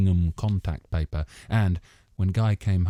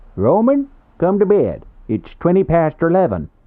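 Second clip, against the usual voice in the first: very loud, high, hoarse, shrill, swooping Midwestern bray; 11 semitones higher, 9 dB louder than usual. The nosy neighbour calls someone to bed: hoarse Midwestern bray. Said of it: "a hoarse Midwestern bray ... the nosy neighbour".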